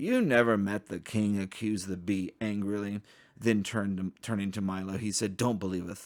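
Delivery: ordinary delivery, nothing marked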